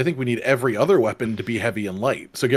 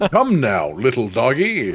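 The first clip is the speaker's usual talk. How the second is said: mock weird Western cowboy accent. Repeating the other player's line back: imitating a weird western accent. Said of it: "That is the weirdest accent I've heard".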